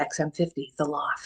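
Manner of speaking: hushed, soft, slow on-air radio DJ voice. Asked about her xm radio past, the interviewee gives her radio dj voice. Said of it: "There's my radio voice for you".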